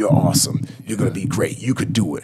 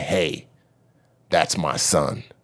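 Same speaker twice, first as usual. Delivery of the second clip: calm, even, slow voice; 5 semitones lower, 4 dB quieter than usual. Retelling confronting a bully near his son, reenacting a calm warning. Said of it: "I just said like this in a calm voice".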